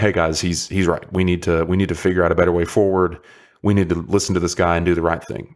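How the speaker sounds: ordinary delivery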